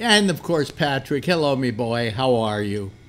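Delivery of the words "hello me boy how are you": put-on Irish accent, slower. A host welcomes Patrick to the show: Irish accent. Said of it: "I don't know why I always do an Irish accent".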